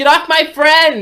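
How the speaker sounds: put-on very high, drawn-out drunken yelling. Voicing a character firing a spell at a grappler: yelling in character. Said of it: "she's yelling out".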